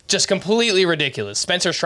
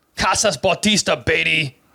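put-on Austrian-style accent on every word. Reading a submitted line aloud in an Arnold Schwarzenegger accent. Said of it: "I guess I'm supposed to read this in an Arnold Schwarzenegger".

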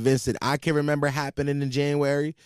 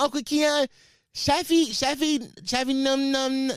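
put-on little-kid voice, much higher, much slower; 11 semitones higher than usual. An uncle describing how his nephew talks, imitating Shafi's toddler talk. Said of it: "He be like".

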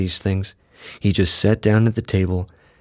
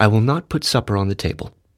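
ordinary delivery

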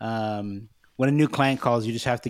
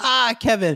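mock thrilled, very high-pitched excited squeal; 12 semitones higher, 5 dB louder than usual. Recapping a favorite Kevin moment, imitating Pam, excited. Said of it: "she excitedly goes".

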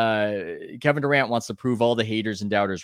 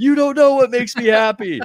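very high, very loud, shrill mocking yell; 8 dB louder than usual. Recalling how other media members mocked him all season, retelling a mocking yell. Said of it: "they would yell in that tone of voice of".

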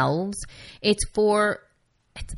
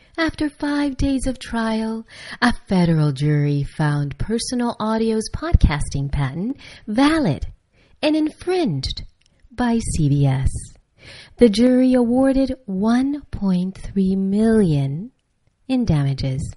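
put-on woman's voice, pitched higher; 4 semitones higher, 4 dB louder than usual. Reading an EFF article aloud, imitating that woman's voice. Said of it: "I'm going to read it as that woman".

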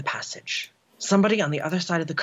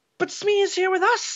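shrill, very high exclaimed cry. The narrator answers a companion's question, crying out. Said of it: "I cried".

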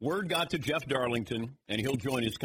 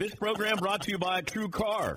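very high, loud, shouted yell; 9 semitones higher than usual. Reading a sponsor message, catching themself: yelling. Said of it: "Why am I yelling?".

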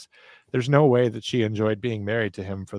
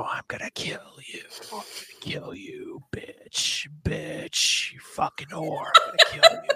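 slow, creepy, menacing, threatening whisper. Host retells a creepy phone call, impersonating the caller. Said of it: "I'm not good at like impersonating".

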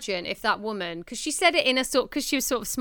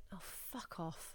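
light, soft, breathy, offhand, easygoing whisper; 4 semitones lower, 23 dB quieter than usual. Showing how delivery changes the line: said light, non-aggressive. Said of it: "if you say it in like a, you know, not an aggressive way".

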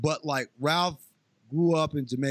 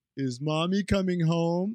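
mock dim-witted tone, higher pitch; 4 semitones higher than usual. Retelling what the character asked after the verdict: imitating a dumb question. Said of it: "And this dumbass says".

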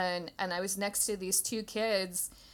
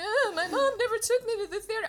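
mock very high, weepy, sobbing through the words; 13 semitones higher, 4 dB louder than usual. Retelling what a crying theatergoer said, imitating someone crying. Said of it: "she's crying".

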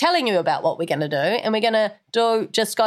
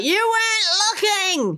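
put-on very high cross shout, dragging out weren't; 12 semitones higher than usual. Retelling a challenge loss, imitating Ange yelling crossly. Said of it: "Ange just yelled out".

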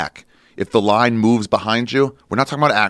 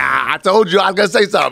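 high, friendly, unbothered, easygoing, light comic voice; 9 semitones higher, 4 dB louder than usual. Retelling what a comic said after apologizing: Godfrey impression. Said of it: "pretty good impersonation of Godfrey".

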